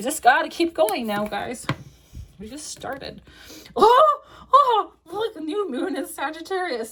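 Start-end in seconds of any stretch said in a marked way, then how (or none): 3.8-6.9 high-pitched, loud, excited squeal. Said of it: "Sorry, I get excited when certain cards come in".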